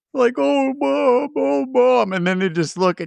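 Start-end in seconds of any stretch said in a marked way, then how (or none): 0.4-2.2 very slow, high, drawn-out fake sobbing. Retelling zombie kids calling to their mother in a movie: imitating fake crying. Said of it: "They're pretending to cry".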